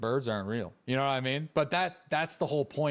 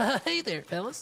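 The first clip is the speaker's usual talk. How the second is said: put-on soft innocent boy voice, higher; 9 semitones higher than usual. Trying a Butters voice after others say they can't. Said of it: "I don't think I could do a Butters voice".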